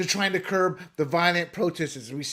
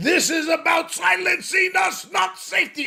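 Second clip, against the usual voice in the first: harsh, shrill, loud soldier voice; 13 semitones higher, 6 dB louder than usual. Quoting a student protester's statement: Nazi-esque soldier voice. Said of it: "I love talking like that Nazi-esque soldier".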